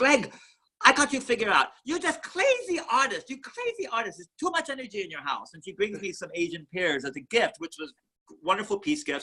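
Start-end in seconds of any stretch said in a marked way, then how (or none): 0.0-5.5 put-on Korean accent, high and swooping. Retelling what a woman said the day after a big fight, imitating a Korean accent. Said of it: "she says in her Korean accent".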